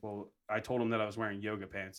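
ordinary delivery

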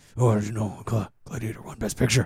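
quiet breathy whisper. Retelling a made-up exchange during a fight: imitating Hulk whispering. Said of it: "where Hulk whispers".

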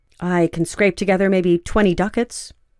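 ordinary talk

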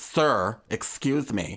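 put-on condescending politeness. Imitating people who say sir but mean i hate you: imitating a condescending "sir". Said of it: "That's very condescending".

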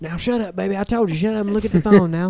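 imitated Southern accent. Retelling a parent hushing a child at the movies: imitating a Southern accent. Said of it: "I'm imposing the accent on them".

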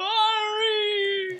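very high, loud scream. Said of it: "while you're screaming".

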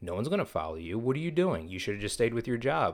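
small, little, negative-sounding voice. Acting out the negative voice that peeks in: little negative voice. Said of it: "the little bitch voice that's always gonna be peeking in".

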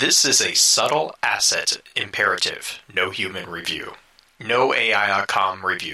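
mechanical robot voice. Asked by the others to do it in a robot voice, robot voice. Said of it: "Do it in a robot voice".

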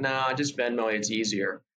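ordinary delivery

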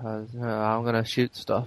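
flat, dull, very monotone voice. Mocking a dull female character's line: very monotone voice. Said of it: "she's got a very monotone voice".

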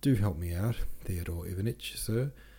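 ordinary delivery

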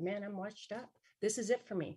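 ordinary talk

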